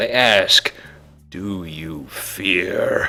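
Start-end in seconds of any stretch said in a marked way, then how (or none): 1.3-3.1 hollow, distant ghostly voices in unison, lower, quieter. Voicing ghosts questioning the players: hollow, distant ghost voices in unison. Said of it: "The ghosts speak in many voices, all hollow and distant".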